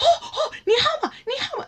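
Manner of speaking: put-on, very high, eager, gushing, enthusiastic voice. Retelling a teacher's excited reply in class: imitating Liu Laoshi, enthusiastic. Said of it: "he was just very enthusiastic".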